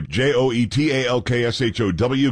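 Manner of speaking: ordinary talk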